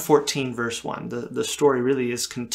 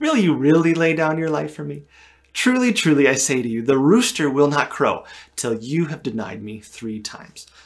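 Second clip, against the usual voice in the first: mildly sarcastic, doubting, swooping tone; 2 semitones higher, 4 dB louder than usual. Retelling a question about laying down a life: acting a little sarcastic. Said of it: "it kind of sounds a little sarcastic, you know, a little".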